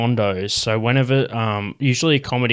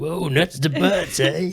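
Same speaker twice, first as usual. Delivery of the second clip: full California dude voice, pitched a touch higher; 6 semitones higher than usual. Imitating a comedian's Californian dude voice: Dean Delray Californian dude voice. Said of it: "He's got that voice".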